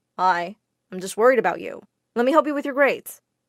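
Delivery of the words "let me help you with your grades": ordinary delivery, nothing marked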